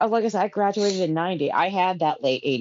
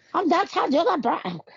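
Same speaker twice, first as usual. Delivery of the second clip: very high, bad, fake British accent; 10 semitones higher than usual. Remembering an MTV VJ with others, trying to talk like her, in a Downtown Julie Brown impression. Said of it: "trying to talk like Downtown Julie Brown".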